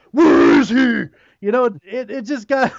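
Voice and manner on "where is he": loud, extremely gruff, demanding tone. Mocking how the hero sounds in costume: imitating Bale's gruff Batman voice. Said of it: "when you're Batman, be extremely gruff".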